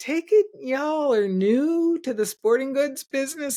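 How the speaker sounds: put-on heavy, thick American Southern accent, high-pitched. Retelling the man on the other end of the phone, thick Southern accent. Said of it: "he said in a very thick Southern accent".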